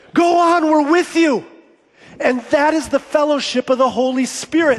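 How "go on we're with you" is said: loud shouting. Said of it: "somebody in this congregation yells out".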